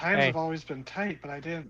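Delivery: guilt-laden, sounding guilty. Voicing the grieving mother explaining herself: guilt in her voice. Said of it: "guilt in her voice".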